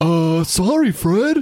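squeaky, very high-pitched cartoon voice. Trying out an impression after asking to do a Barney: Barney Rubble voice. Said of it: "can I do a Barney?".

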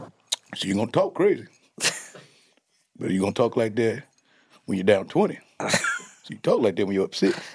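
put-on cocky, trash-talking athlete voice. Telling a story about Jordan smoking a cigar, the speaker does a Michael Jordan impression. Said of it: "He's smoking a cigar like".

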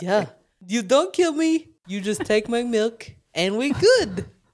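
put-on goat voice with a Russian accent. Doing a goat impression in an improvised bit with a friend, Russian-accented goat voice. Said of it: "He sounds Russian".

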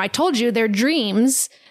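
mock fed-up, insistent, frustrated tone. Retelling what a woman snapped at the people questioning her, imitating frustrated speech. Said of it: "she starts getting frustrated and she says".

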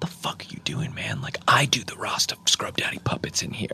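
put-on distress. Retelling a puppet show moment, retelling someone getting upset. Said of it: "Andy separately is really getting upset".

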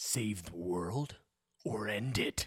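very low, slow, dramatic, intense delivery. Reading a sponsor tagline for a book series, intense voice. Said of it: "I had to use my intense voice".

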